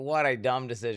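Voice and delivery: ordinary talk, nothing marked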